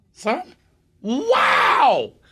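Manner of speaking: very high, swooping exclamation, rising way up on wow. Answering a request to hear him, doing a Huell Howser impression. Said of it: "That's kinda what he sounds like".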